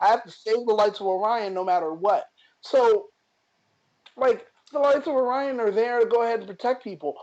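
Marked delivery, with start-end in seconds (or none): none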